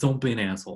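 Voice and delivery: Long Island accent coming out. A speaker repeating a piece of advice, Long Island accent coming out. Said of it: "There's my Long Island coming out".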